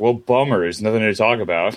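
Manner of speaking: plain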